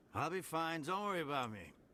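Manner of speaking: put-on drunk-sounding, slurred words running together. Playing a drunk who is told he's just a drunk, slurring drunk. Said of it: "He's literally slurring his words".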